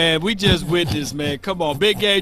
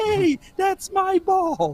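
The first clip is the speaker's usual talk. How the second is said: very high, slow, drawn-out sing-song; 14 semitones higher than usual. Retelling what Playmaker said in an interview: high-pitched Playmaker voice. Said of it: "he get that high-pitched voice".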